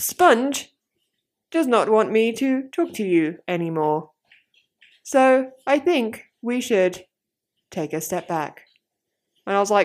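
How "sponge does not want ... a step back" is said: voice like a little robot. Retelling how Siri read out a message to her, in a little robot Siri voice. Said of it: "like in a little robot voice".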